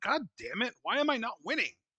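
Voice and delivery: high-pitched, fed-up, frustrated voice losing patience. Voicing a wrestler who is not winning, mock frustrated complaint. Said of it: "Tanaka's getting frustrated".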